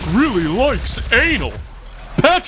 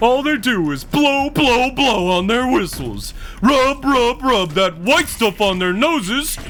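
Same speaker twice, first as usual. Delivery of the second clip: dopey cartoon character voice. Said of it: "it takes a minute to get into the Patrick voice".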